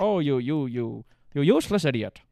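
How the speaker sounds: put-on loud British accent in old-film style. Quoting the actor's film lines in his british voice. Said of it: "it was a British voice".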